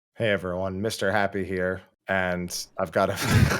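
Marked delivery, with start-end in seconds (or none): 0.2-1.8 flat, lifeless, dead-sounding, quieter delivery. Asked for shout-outs, giving his usual greeting, flat and dead-sounding. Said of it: "You sounded so dead".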